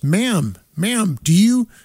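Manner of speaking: high, loud yelling. Telling how a protester at a beer festival yelled at the speaker: retelling a man yelling. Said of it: "this guy yells at me and goes".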